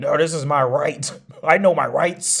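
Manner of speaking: loud, high-pitched, indignant insistent voice. Imitating people who raise their voice at cops: imitating raised voice at cops. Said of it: "they'll raise their voice at cops".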